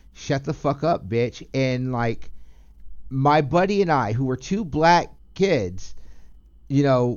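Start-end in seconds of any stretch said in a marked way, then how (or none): none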